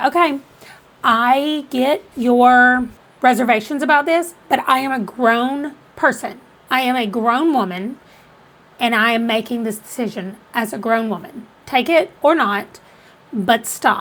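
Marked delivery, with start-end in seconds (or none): none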